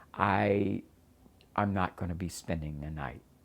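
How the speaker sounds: normal talking voice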